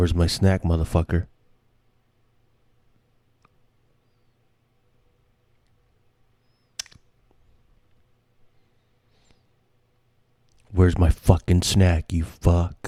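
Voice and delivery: voice put on as a dog. Imitating their dog when she knows they have snacks, impression of my dog. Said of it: "an impression of my dog".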